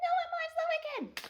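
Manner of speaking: very high, slow soprano, stretching the word I'm. Explaining how the character sounds when she lies in the musical: Glinda's high soprano. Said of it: "she goes up into her soprano".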